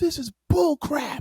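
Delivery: very high-pitched, shrill yelling outburst. Retelling how he sat there at the press conference: imitating someone yelling. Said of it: "he was yelling".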